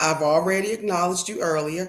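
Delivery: ordinary talk, nothing marked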